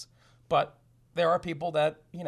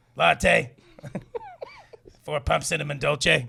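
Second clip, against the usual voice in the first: put-on choked-sounding voice, louder; 6 dB louder than usual. Joking about ordering a coffee at Starbucks in the Beetlejuice voice. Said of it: "They'll put Beetlejuice on the".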